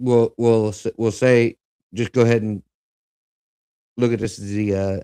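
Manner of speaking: stuttering, stumbling restarts, tripping over words. Speaker, realizing only five minutes remain, sets up the next segment; stuttering. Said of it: "I'm sorry I'm stuttering here".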